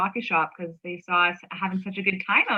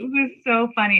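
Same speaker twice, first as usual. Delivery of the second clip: ordinary talk, nothing marked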